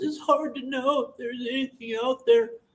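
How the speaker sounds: feeble, weak, wimpy little voice, pitched high. Making fun of how he talks, mocking a wimpy voice. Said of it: "How he has that wimpy ass voice".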